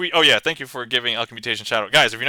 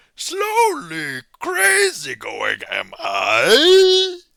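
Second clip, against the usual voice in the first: very high swooping sing-song voice with long stretched I; 12 semitones higher than usual. Reading out a random request that sounds like Yoda, Yoda voice. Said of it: "that's the best I can do".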